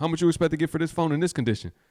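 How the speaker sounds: play-acted, slightly aggressive manner. Retelling how buyers were asked for a price: imitating own aggressive question. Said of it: "It might sound a little aggressive".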